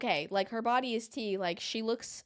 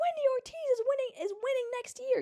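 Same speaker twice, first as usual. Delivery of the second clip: put-on, piercing, high-pitched, excited yell. Retelling what a man in the audience did: imitating a man yelling. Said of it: "He's like".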